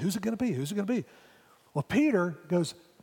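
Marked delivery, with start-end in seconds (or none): 0.0-1.0 hushed, half-whispered delivery. Retelling how everybody at the table asked around: retelling a half-whisper. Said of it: "everybody's whispering".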